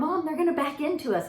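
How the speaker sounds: play-acted high, frantic, panicked scream. Retelling a daughter screaming from the back seat: imitating a scream. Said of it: "Ava's screaming like".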